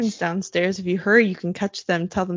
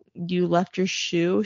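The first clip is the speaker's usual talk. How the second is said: put-on deadpan, flat delivery. Retelling what Bree said in reply, imitating Bree's deadpan. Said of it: "She deadpanned".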